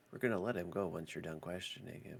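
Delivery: speaking in a whisper. Voicing a character answering a player's whispered question: whispering. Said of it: "she whispers to you".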